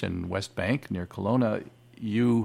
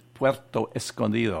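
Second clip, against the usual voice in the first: Mexican-Spanish accented speech. Naming the town someone called paradise, in a fake Mexican-Spanish accent. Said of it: "That's my fake Mexican-Spanish accent".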